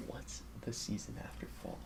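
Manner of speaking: soft, hushed, barely voiced whisper. Asking a one-question game show question to another speaker: whispering. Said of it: "I'll whisper it to you".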